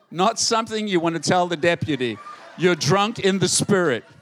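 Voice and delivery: ordinary talk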